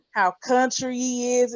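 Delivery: plain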